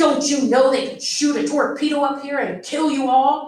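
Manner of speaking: stern, growling, officer-like harsh tone. Narrator reading an army officer ordering people off the bridge, in a stern growl. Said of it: "He growled".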